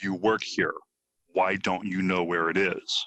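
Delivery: acted, mock-rude tone, said not nicely. Retelling what they say to store staff who can't help, said not nicely. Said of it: "in not such a nice way".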